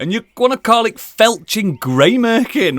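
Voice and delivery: ordinary talk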